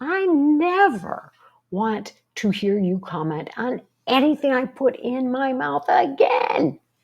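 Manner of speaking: very slow, high angry shout, words not stretched. Acting out a blow-up at someone who keeps criticizing them, angry shouting. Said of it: "and you're shouting".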